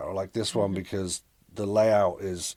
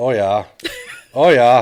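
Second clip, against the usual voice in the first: very loud, attempted put-on Midwestern accent; 4 semitones higher, 14 dB louder than usual. Trying a Midwestern accent after being asked to do one: attempted Midwestern accent. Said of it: "get you to do a, a Midwestern accent".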